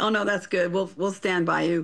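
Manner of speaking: plain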